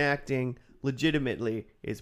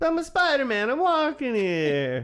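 put-on New York accent, higher and louder; 10 semitones higher, 4 dB louder than usual. Joking about an actor's Spider-Man accent: Spider-Man Queens accent. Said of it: "the Bronx accent or whatever".

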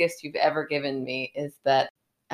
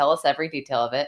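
ordinary talk

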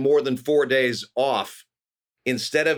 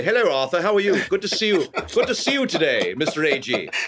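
put-on British accent; 4 semitones higher than usual. Recalling greeting a customer as a waiter, in a put-on British accent. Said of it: "I'm going to be British".

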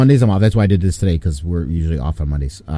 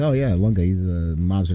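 usual speaking voice

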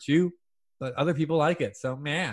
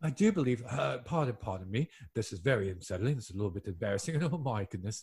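put-on English accent, lower and quieter; 6 semitones lower, 9 dB quieter than usual. Doing accents for friends who count them off, in an English accent. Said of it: "you owe us one more English accent".

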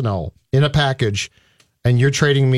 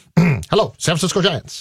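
put-on old-fashioned, old-timey announcer voice; 4 semitones higher than usual. Pretending to call the san francisco giants: old-timey voice. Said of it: "Why are you doing it in an old timey voice?".

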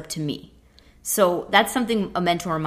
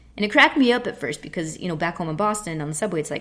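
normal talking voice

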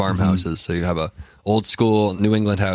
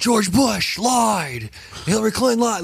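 acted-out, very high-pitched, shrill scream; 14 semitones higher than usual. Retelling yelling at a rally from a gazebo: retelling a scream. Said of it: "I'm just screaming, like".

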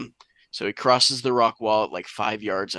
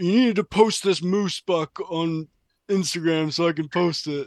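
casual, pitched-up buddy voice; 7 semitones higher than usual. Retelling what a friend said on the phone: impression of a friend. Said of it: "Great impression".

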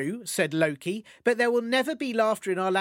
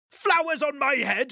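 furious, bellowing, booming angry voice; 6 semitones higher than usual. Reading a story aloud, Thor answers Loki in a booming angry voice. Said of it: "boomed Thor, who was very angry".

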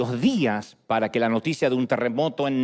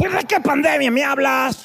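puffed-cheek character voice, much higher pitch; 12 semitones higher, 4 dB louder than usual. Retelling how an interviewee answered a question about the pandemic, Kiko voice. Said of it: "respondió con la voz de su querido personaje Kiko".

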